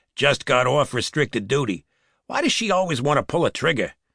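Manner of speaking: ordinary delivery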